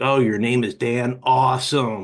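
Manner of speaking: eerie, slow, creepy synthetic assistant voice. Imitating what the phone bot says to callers: imitating a creepy bot voice. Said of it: "real creepy".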